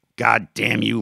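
spitting the words out. Maori, glaring at Marks in their quarrel, spitting the words out. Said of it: "Maori spit out".

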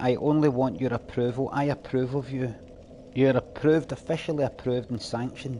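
ordinary talk

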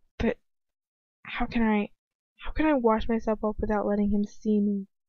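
plain

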